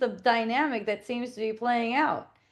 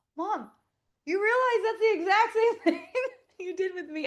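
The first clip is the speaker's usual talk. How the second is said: mock laughter through the words, pitched up; 9 semitones higher than usual. Retelling what was said to mom about the secret, laughing while talking. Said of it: "laughing too".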